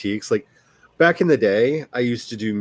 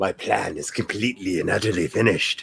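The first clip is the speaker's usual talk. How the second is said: menacing, low, sinister villain voice; 4 semitones lower, 3 dB quieter than usual. Speaker signing off for the night reads a line in a sinister voice. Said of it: "I wanted to read that in a sinister voice".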